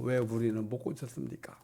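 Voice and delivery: soft, low, quiet voice. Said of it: "조용히 물어봤어요".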